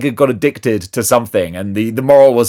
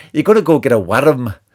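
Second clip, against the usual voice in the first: put-on Scottish accent. Saying the figure's name Worm the way he hears it: Scottish accent. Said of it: "I hear worm in a Scottish accent".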